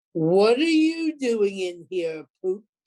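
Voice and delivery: loud, rumbling, terrible voice. A couch that has sprouted an arm grabs the narrator, speaking in a terrible rumbling voice. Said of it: "a terrible voice that rumbled".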